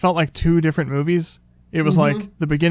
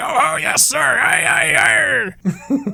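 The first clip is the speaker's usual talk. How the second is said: very high, slow pirate voice, each "aye" stretched out; 12 semitones higher than usual. Retelling a film scene where Hooper mocks Quint: imitating Hooper's mock pirate voice. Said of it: "talking like a pirate".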